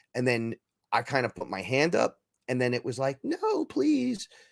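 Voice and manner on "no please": put-on tiny, very high, creaky little-girl voice. Retelling a confrontation, mimicking the other person's plea, imitating a little girl's voice. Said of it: "You sound like a little girl".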